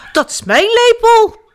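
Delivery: loud, very high, squeaky squirrel-like voice. The squirrel protests to the little one who took the spoon, squeaking. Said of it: "piepte eekhoorn".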